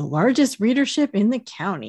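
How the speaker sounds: ordinary delivery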